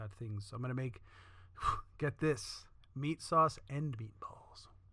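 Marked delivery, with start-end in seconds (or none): 2.9-4.7 slow, soft, hushed whisper. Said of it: "Blow your mind".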